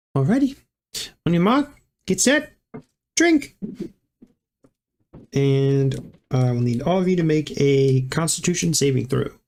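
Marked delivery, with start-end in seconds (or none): 0.1-3.5 put-on woman's voice, pitched very high. The game master voices a woman starting a drinking contest, in a woman character voice. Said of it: "She goes. / OR is in charge of this one".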